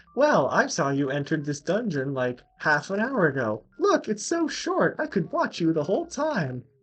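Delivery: high, loud, sarcastic, taunting voice.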